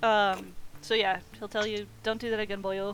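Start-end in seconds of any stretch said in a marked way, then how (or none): 2.0-2.9 put-on Scottish brogue. Voicing a character who warns a player: scottish accent. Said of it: "he turned real Scottish all of a sudden".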